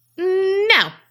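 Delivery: snotty little imp voice, very high, drawn-out, bratty. Acting out a stubborn imp refusing: bratty imp voice. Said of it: "That is exactly what I think one of them would sound like".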